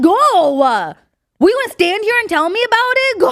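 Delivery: mock sassy attitude. Retelling what was said to men blocking the way: imitating own retort with attitude. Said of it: "We had attitude".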